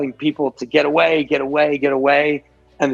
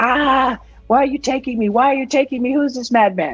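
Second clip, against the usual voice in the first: put-on very high, shrieking, screaming child's cry; 10 semitones higher than usual. Narrating a scene where the player scoops up a daughter; screaming child. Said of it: "she starts screaming".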